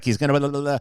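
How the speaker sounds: double-speed, sped-up, rattled-off babble. Describing playing an instructor's videos at twice the speed: imitating John at double speed. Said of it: "I literally make him talk like this".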